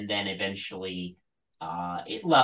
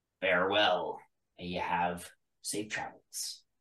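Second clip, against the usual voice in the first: put-on pirate voice, quieter; 3 semitones lower, 6 dB quieter than usual. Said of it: "It was just a pirate voice".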